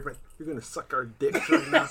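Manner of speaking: hushed, soft whisper, close to the ear. A speaker retells what he whispered in a detained tagger's ear; retelling a whisper. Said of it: "I whispered in his ear".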